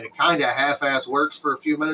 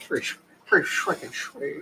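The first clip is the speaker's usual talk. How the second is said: put-on cartoon dad voice, quieter; 6 dB quieter than usual. Showing a Christmas present from the boss: Peter Griffin voice. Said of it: "Peter Griffin".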